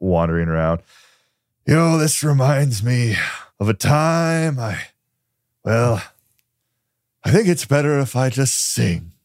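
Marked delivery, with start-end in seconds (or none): 1.7-9.0 put-on tipsy character voice, higher. Voicing a character wandering around with a bottle: drunk character voice. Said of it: "very out of it at this point".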